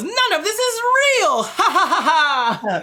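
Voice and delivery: very high, slow, drawn-out doll voice. Joking that a stockbroker Barbie appears: Stockbroker Barbie voice. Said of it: "And she just comes out and goes".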